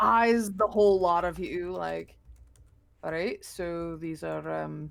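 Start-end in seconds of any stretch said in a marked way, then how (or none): 3.0-4.9 put-on Scottish accent. Voicing the character Leon eyeing the group: Scottish accent. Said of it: "I just started learning this accent".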